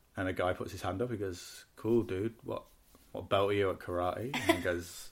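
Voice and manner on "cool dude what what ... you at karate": put-on flat, downbeat delivery, lower and quieter. Retelling a comedian's opening line to a crowd: imitating a downbeat comedian. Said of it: "he's really downbeat as well".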